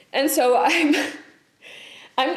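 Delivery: high, very slow talking through laughter. Admitting that everything feels like utter shit, laughing while talking. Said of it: "I don't know why I'm laughing".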